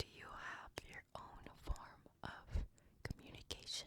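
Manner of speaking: very soft, hushed whisper. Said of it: "I'm gonna now whisper near the creature's ears".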